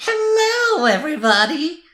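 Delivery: wild, airy, very high and loud shriek. Showing how to make voices, doing a crazy voice by pushing out lots of air. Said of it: "a very crazy one by pushing out a lot of air".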